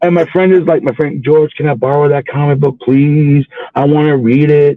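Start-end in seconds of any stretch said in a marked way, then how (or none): 1.6-4.8 mock-tearful, pleading tone, slower pace. Retelling what a fifth-grade friend asked him, imitating George in tears. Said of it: "guy was like in tears".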